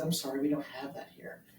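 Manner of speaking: very calm, soft, very polite voice. Retelling how the waiter answered the customer: imitating a calm, polite waiter. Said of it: "in a very calm and very polite way".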